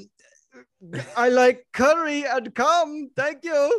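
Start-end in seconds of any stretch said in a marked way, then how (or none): 1.2-3.8 high, slow, bad mock Indian accent. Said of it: "if I told you to do it in an Indian accent and you went".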